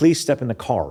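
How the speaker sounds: put-on American accent. Explaining rhoticity, imitating british actors doing an american accent. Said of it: "if they're speaking with an American accent".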